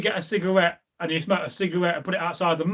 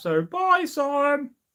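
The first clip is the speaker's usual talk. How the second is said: goofy, high, silly put-on voice; 8 semitones higher than usual. Saying goodbye to sam as he leaves, in a funny voice. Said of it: "I don't know why I did it in that funny voice".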